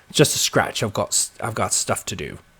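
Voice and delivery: terrible put-on English accent. Reading out what Zenith says, voicing Alfred in a bad English accent. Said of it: "That was a terrible English accent".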